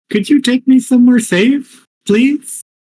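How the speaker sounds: small little turtle voice, pitched high. Playing a tiny turtle who hopped across and can't get back; tiny little turtle voice. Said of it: "like a tiny tiny little turtle".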